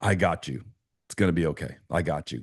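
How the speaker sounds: joyful, chuckling, reassuring tone. Speaker retells an imagined moment with Jesus, arm around him; retelling chuckling speech. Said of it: "he's saying it with like a chuckle".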